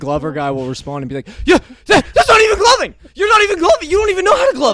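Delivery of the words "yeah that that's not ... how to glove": very high, shrill, loud, frantic, outraged ranting. Retelling an online argument, imitating someone freaking out. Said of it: "And is freaking the fuck out".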